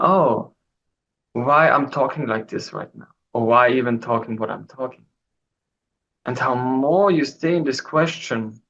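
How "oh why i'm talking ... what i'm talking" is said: ordinary talk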